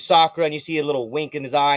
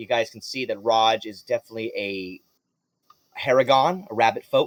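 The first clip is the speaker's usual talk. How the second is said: ordinary talk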